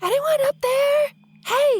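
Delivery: whisper-yell, voice very high and rising. Playing a character at a closed city gate, whisper-yell up to the tower. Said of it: "I'm gonna whisper yell up".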